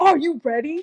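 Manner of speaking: put-on pushy, aggressive, confrontational, demanding tone. Showing how he asks before recording the podcast, imitating someone asking aggressively. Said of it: "not aggressively".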